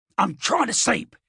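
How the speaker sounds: growled out, dog-like growly voice. A groggy talking dog answers his owner; growly voice. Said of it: "he quite literally said it in a growly voice".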